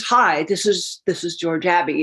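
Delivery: put-on low, slow, uninflected voice. Retelling a job-offer phone call: imitating George Abbey's low, slow, flat voice. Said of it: "speaks low and speaks slow".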